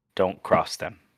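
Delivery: menacing hushed voice. In a role-play scene, warning a companion so nobody else can hear, whispered threat. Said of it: "I whisper to her so nobody else can hear".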